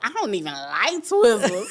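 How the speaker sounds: loud, sassy, snippy tone with swooping pitch. Retelling own reply to a reservationist's joke: imitating own attitude. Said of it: "but I had an attitude".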